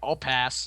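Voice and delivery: soft, muttered aside under the breath. Retelling someone's reply to a threat, imitating a mutter under the breath. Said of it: "under his breath".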